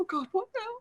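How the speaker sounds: hushed, very high-pitched half-whisper. Voicing hoarse villagers who half-whisper among themselves: villagers half-whispering. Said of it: "whispering among themselves".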